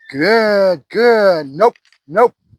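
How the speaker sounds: flat, matter-of-fact monotone, good drawn out. Speaker demonstrating marker words for a dog, matter-of-fact monotone. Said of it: "just real monotone in that".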